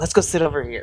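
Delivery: quiet muttered aside under the breath. Retelling what a man said while leading someone to another seat, under his breath. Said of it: "underneath his breath".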